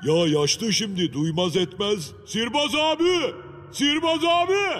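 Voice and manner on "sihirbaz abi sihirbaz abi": high, loud calling out. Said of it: "Bağırmasana çocuğum".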